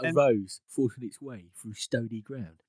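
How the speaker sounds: put-on London Cockney accent. Quoting a line from the book in a put-on cockney accent. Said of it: "George did the Cockney accent".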